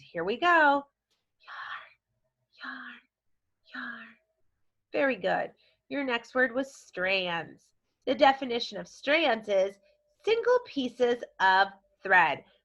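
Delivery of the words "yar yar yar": loud theatrical whisper. Speaker leading listeners in repeating a word, in a half-whisper voice. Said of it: "our whisper voice".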